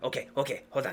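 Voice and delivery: bursting with keen, eager excitement, character voice. Voicing an inventor character showing off a pistol: excited, eager NPC voice. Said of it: "gets real excited and goes".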